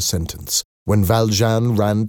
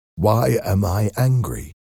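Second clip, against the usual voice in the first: ordinary delivery, nothing marked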